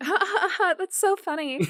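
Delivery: very high, loud airhead voice and laugh. Talking about a Magic the Gathering group, demonstrating the stereotypical dumb girl voice. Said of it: "I've literally never heard you do that voice before".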